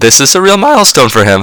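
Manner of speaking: voice crack. Congratulating John Farrell on his 400th win, voice cracking. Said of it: "A little voice crack there".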